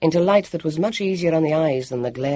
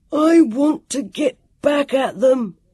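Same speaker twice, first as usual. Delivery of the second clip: very high, booming, angry bellowing roar; 10 semitones higher, 5 dB louder than usual. A narrator reads an angry boy's line, bellowing. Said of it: "he bellowed".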